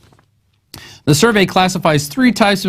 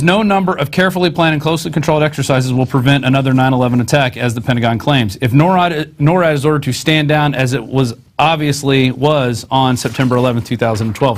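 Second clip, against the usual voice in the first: usual speaking voice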